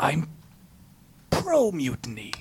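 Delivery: whispering. A character asked whether they are pro or anti-mutiny answers: whispering. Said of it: "why are you whispering that?".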